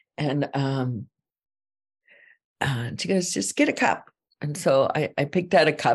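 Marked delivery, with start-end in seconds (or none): 3.3-4.1 mock curt, bossy tone, pitched up. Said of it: "she was really bossy".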